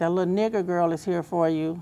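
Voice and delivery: ordinary talk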